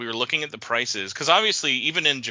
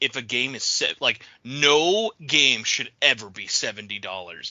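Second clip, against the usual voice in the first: ordinary talk, nothing marked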